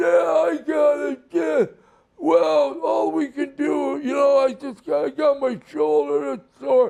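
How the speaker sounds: gruff, rasping put-on voice. Retelling meeting a wrestler at a restaurant: imitating Johnny Ace's hard raspy voice. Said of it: "And he's talking like this".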